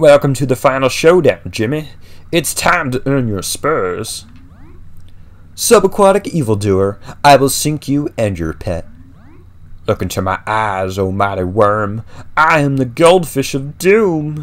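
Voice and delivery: cartoon villain voice, high and loud, belted. Trying out a character's lines aloud, in a Bob the Goldfish voice. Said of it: "I don't know if I can do a Bob the Goldfish voice".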